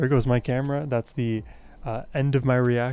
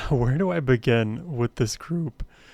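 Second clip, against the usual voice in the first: voice breaking and cracking mid-line. Starting to talk about the group, voice cracking. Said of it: "excuse my voice crack there".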